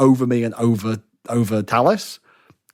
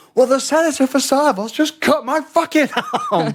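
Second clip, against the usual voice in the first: very high, swooping, furious, indignant shout. Retelling shouting back at a friend about a senator who cut him: retelling a shout. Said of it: "I just shout".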